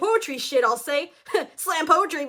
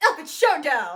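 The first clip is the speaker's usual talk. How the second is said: epic, dramatic fight-night announcer voice. Hyping a crossover matchup: dramatic announcer voice. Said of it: "let me put on my announcer voice for this".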